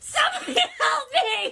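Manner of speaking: screaming while laughing. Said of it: "I run through the kitchen screaming".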